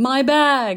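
mock theatrical cry, high, loud, overplayed. Retelling a contact lens commercial where a man holds a box: imitating a dramatic cry. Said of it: "same tone that the guy said".

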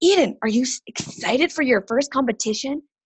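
all-excited, eager, bright voice. Recalling asking her daughter about her first competition, the speaker retells her excited question. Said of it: "I turned to her all excited".

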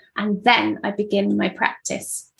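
ordinary talk, nothing marked

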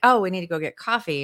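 ordinary talk, nothing marked

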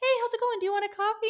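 very high, very loud, shrill, super chipper cheer. Describing how everyone acts in the morning, mock-chirpy morning cheerfulness. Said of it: "super chippy and chirpy in the morning".

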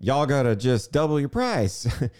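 put-on country Southern, rural Georgia accent. Quoting a man from rural georgia, the speaker does his rural georgia accent. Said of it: "Tennessee accent or whatever he's from".

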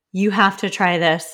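ordinary talk

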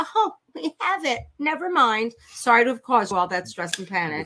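mock breezy, offhand, dismissive tone. Retelling how the school answers a parent: imitating the school's dismissive tone. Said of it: "With that tone".

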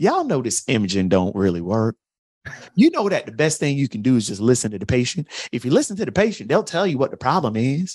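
put-on Southern accent. Speaker retelling a surgeon addressing other orthopedic surgeons, James Andrews Southern twang. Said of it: "in his Southern twang".

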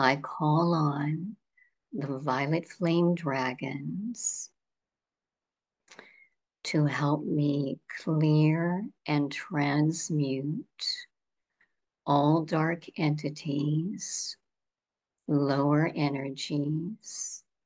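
slow, unhurried delivery. Leading everyone in calling on the violet flame dragons together, speaking slowly. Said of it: "and I'll go slowly".

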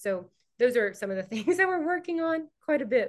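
high, loud, excited delivery, laughing and bubbling.

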